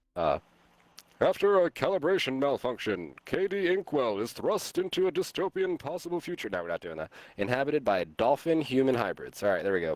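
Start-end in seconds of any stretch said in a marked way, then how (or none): 1.2-6.5 very high, showy announcer delivery. Reading a story summary aloud, putting on an announcer voice. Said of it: "saying this in some sort of uh, announcer voice".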